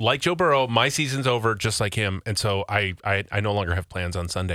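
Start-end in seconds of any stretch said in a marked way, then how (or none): none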